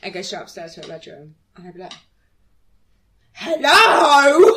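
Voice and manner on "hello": really aggressive, very loud, shrill delivery. Retelling greeting a flatmate home from work: imitating own aggressive hello. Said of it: "Really aggressively".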